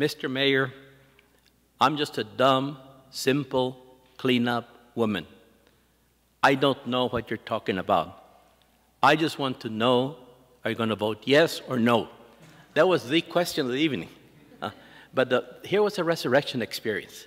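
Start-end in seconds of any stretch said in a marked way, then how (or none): 0.0-12.1 very heavily broken English speech. Retelling a clean-up woman's question to the mayor, imitating very broken english. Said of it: "In very broken English".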